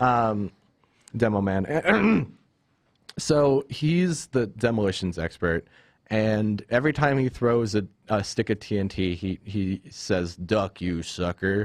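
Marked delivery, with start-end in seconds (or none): 10.4-11.7 put-on American Western accent. Quoting a demolitions expert character's catchphrase, western accent. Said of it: "in a very much a Western accent".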